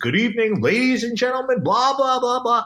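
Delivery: fake douchey DJ announcer voice, high and loud. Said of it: "that fake voice".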